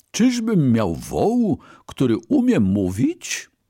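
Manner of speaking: high, astonished cry of disbelieving surprise. A brahmin, hearing his ox speak, exclaims in surprise. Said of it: "zaskoczony bramin wykrzyknął".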